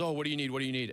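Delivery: play-acted alarmed, caught-off-guard, panicky, frantic voice. Retelling how the guy at an auto shop met them at the door: imitating someone panicking. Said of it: "in a panic, meets us at the door and goes".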